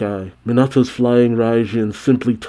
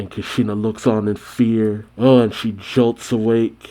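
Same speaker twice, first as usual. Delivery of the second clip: normal talking voice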